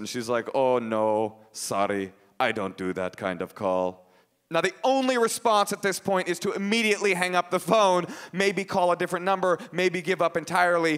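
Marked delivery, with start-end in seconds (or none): 0.5-4.1 put-on deep, low, slow Russian man accent. Retelling a phone call, quoting the woman who answered, sounding like a Russian man. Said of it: "so it'll sound like a Russian man".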